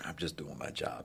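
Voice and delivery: very soft, offhand, understated tough delivery. Retelling a movie scene, quoting the lead: Jason Statham impression. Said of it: "my Jason Statham impression is horrible".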